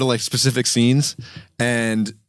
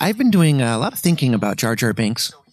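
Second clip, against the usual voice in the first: put-on stock, same-old internet video voiceover narrator voice; 2 semitones higher than usual. Mocking the voice that is always heard on these videos: imitating the usual narrator voice. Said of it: "It's always the same voice on these videos".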